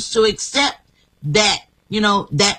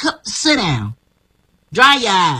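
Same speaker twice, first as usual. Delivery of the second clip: put-on elderly grandmother voice. Retelling a grandmother's words to a crying child: imitating Grandma Rogers. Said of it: "And she would, like".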